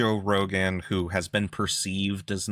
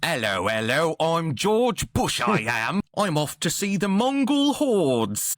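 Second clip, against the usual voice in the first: put-on swooping, pitched-up, old-timey British period-film accent; 9 semitones higher, 4 dB louder than usual. Asked for an impression, doing it like a historical-movie figure: George Bush as British historical-movie figure. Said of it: "I'm gonna do it like any historical figure".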